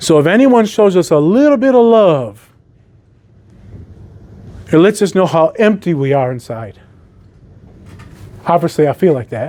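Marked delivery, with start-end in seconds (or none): 0.0-6.8 choked-up, breaking voice, emotion catching in throat. Speaking to a group after meeting Audie, getting choked up. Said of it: "That's why I'm getting choked up".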